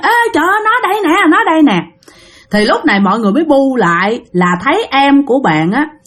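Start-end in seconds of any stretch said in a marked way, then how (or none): 0.0-1.8 high, excited calling out. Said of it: "la lên nói".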